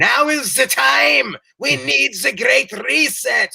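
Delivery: put-on very high, thick German accent. Mocking a public figure who wrote a book: Klaus Schwab impression with thick German accent. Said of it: "eighty-two-year-old bald German dude with a thick accent who's like".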